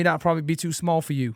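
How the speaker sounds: put-on American accent. Retelling what a man said to him in a garage: imitating an American accent. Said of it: "in his accent".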